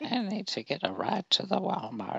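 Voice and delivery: fake old lady voice, very high and loud. Answering a suggestion to act like an old lady calling: put-on old lady voice. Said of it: "Say we're an old lady calling".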